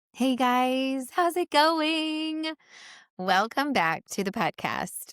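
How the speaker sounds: scratchy voice. Welcoming listeners back to the podcast: scratchy voice. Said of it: "Don't mind my scratchy voice".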